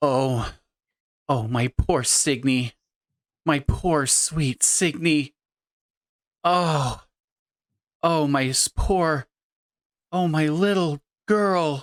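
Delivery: tearful, stop-start, halting crying. Voicing a grieving mother seeing her daughter's picture: character crying. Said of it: "she begins crying".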